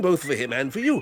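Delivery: plain reading voice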